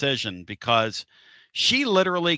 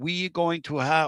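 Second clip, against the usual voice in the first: slow, halting put-on French Canadian accent; 3 semitones higher than usual. Retelling an announcer's words: imitating French Canadian accent. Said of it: "in his Ca-, French Canadian accent".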